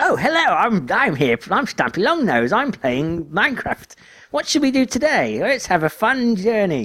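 very high, swooping, wholesome-sounding voice. Describing a Let's Player to another speaker: Stampy Longnose voice. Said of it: "his voice is just like".

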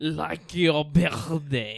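phlegmy fake French accent. Quiz player repeating a contestant's buzzer line; put-on French accent. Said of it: "That's how you do a French accent".

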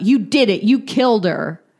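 abrupt, sudden blurted outburst. Retelling what a man blurted when another man walked up, retelling a sudden blurt. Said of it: "Matt just blurts out".

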